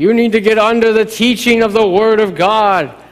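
mock booming preacher voice. Imitating a former pastor preaching to the church: imitating a pastor's booming voice. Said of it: "He had a big sort of booming voice".

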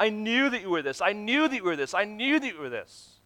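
play-acted heavy sarcasm, hollow and insincere. Acting out Jonah complaining to God: sarcastic Jonah voice, put on. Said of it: "it's a sarcasm thing".

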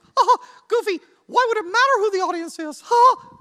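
very high, loud, squeaky cartoon voice. Voicing the audience's question to Goofy, in a Mickey Mouse voice. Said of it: "you are thinking in your Mickey Mouse voice".

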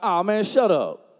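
slow, jokey, teasing, dismissive tone. Retelling what they jokingly said before their son spoke up, joking. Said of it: "I was jokingly like".

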